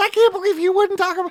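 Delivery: very high, put-on woman's voice. Retelling what a woman said to him, high-pitched woman's voice. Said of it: "When you make that voice for women".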